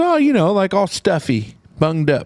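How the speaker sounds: put-on British woman voice. Retelling a woman from across the pond explaining a phrase, put-on british accent. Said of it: "she's from across the pond".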